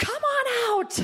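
very high, loud, slow laughing yell.

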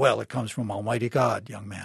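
stern, low and strict. Telling Dr. Evermore's childhood story, voicing his father's answer in a strict Presbyterian voice. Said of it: "answered in a strict Presbyterian voice".

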